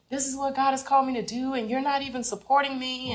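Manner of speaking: reenacted yelling. Retelling an argument while leaving home: retelling own past yell. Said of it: "I just started yelling".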